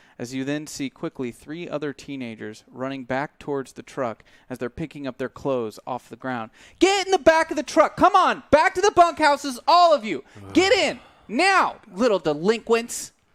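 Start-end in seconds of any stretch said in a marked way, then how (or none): 6.8-13.1 very high, very loud, shrill, swooping shouts. Voicing someone ordering teenagers into the back of the truck: yelling. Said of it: "you hear this yelling".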